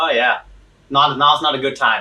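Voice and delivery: ordinary talk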